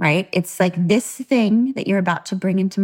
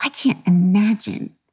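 mock sniffy, disdainful tone. Imitating people who keep repeating a sentence: imitating a disdainful tone. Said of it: "with that tone".

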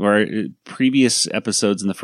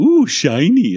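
put-on high, loud, pitched-up little British accent; 8 semitones higher, 5 dB louder than usual. Quoting a cartoon scene where the Brain sounds like Pinky: Pinky voice, little British accent. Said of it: "his little British accent and stuff".

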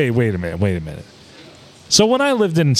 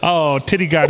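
usual speaking voice

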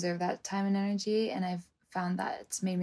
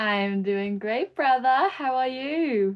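fake Australian accent, higher and louder; 6 semitones higher, 8 dB louder than usual. Answering a welcome on the episode, joking: put-on Australian accent. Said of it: "the Australian accent for the whole episode".

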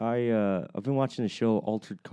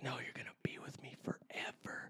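hushed, creepy put-on whisper; 2 semitones higher, 18 dB quieter than usual. Retelling a scene where the sister wants her brother forever: imitating a creepy line. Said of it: "All creepy".

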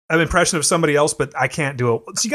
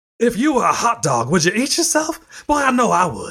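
bad put-on announcer voice, pitched higher; 5 semitones higher than usual. Imitating the baseball announcer Will Ferrell used to do: bad Will Ferrell Harry Caray impression. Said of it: "He'd talk like this".

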